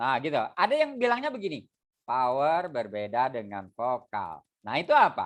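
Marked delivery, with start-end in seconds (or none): 2.0-4.4 plain, clear delivery with no force behind it. Public speaking lesson contrasting plain voice with power: voiced without power. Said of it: "Keluarkan vokalnya, tapi tidak ada powernya".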